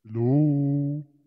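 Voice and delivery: voice-changer monster tone. Demonstrating a voice changer's presets one by one; monster voice effect. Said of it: "Monster tone".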